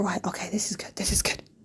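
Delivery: soft, hushed whisper. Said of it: "and I'm like".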